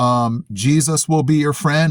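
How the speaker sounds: ordinary talk, nothing marked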